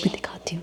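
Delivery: soft, hushed whispering. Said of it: "मैं धीरे बोल रही हूँ".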